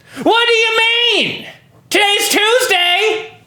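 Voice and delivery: hostile, belligerent, very high-pitched voice. Showing another way to read the same audition line: belligerent asshole read. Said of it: "just a belligerent asshole".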